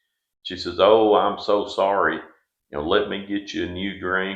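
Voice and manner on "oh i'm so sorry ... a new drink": mock-apologetic, acted apologetic delivery. Telling a joke about a fly in a drink, imitating someone apologizing. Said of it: "totally apologetic and everything about it".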